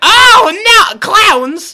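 put-on very high, very loud, shrill, drawn-out drunken shriek. Telling a story about a drunk lady who sees a clown, imitating her screaming. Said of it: "Too loud".

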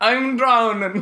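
put-on Jamaican English accent. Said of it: "The worst Jamaican slash English accents".

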